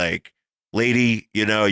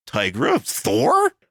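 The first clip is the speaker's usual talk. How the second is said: rising, questioning pitch on Tigra and Thor; 6 semitones higher than usual. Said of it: "it kinda sounded like a question".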